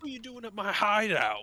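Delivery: put-on British accent from London. A character addresses the group, in a british accent straight from london. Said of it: "he's like straight from London".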